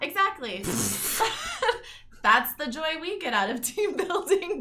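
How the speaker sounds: high, loud, teasing laughter while speaking.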